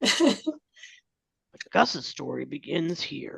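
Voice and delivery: put-on very slow, rough, creaky old-man narrator voice. Quoting the script's narrator while discussing the script: old man narrator voice. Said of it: "you do such a good job at the old man voices".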